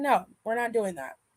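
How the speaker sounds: put-on flat deadpan. Recalling a woman who didn't believe in love, imitating a deadpan refusal. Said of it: "I loved how deadpan she was".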